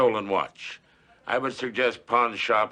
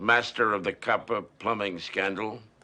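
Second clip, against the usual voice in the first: plain reading voice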